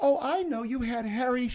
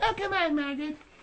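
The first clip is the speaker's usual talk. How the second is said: high, mocking imitation voice. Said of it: "two can play at that game".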